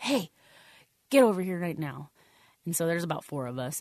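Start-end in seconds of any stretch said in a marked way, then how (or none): 0.0-2.1 mock, barked drill-sergeant yelling. Retelling how a female staff sergeant addressed runners who fell behind, imitating a staff sergeant yelling. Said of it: "she's yelling at us".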